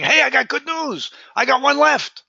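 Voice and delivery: lively, enthusiastic delivery. Showing how to tell someone who comes back the good news: excited delivery. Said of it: "make it exciting".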